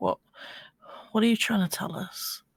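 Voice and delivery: high-pitched, hushed whisper. Voicing a character who speaks quietly to a hawk: whispering to herself. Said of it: "just kinda whispers".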